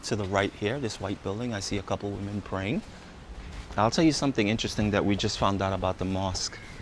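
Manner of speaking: quiet, hushed voice.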